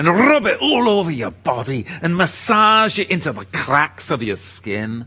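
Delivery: put-on Irish accent. Speaking to Yahira, in a put-on Irish accent. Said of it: "I had to put an Irish accent on there".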